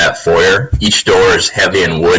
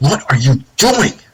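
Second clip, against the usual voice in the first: freaked-out, alarmed aside, pitched up; 7 semitones higher than usual. Voicing Kalen, asking another character what he is doing: under her breath. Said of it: "she says under her breath".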